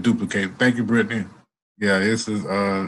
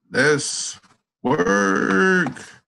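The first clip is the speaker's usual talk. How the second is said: very high, creaky, raspy, rough character voice; 9 semitones higher than usual. Signing off to the audience with a catchphrase: Lorenzo Hoffman voice. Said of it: "in my Lorenzo Hoffman voice".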